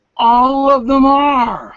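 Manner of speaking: high, slow, amazed gasp. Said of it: "you're gonna go".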